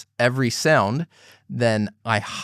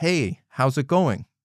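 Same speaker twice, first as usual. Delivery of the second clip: friendly, pitch rising a lot on how's it going; 3 semitones higher than usual. Showing a learner how the question sounds: friendly rising intonation. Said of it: "it goes up a lot because it's a friendly".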